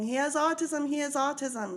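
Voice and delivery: put-on scream. Retelling a mother screaming to police officers at her window: imitating a mother screaming. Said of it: "She's screaming".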